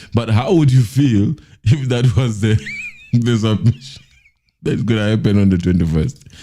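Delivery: talking through laughter. Asking viewers how they would feel: laughing while talking. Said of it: "I'm sorry for laughing".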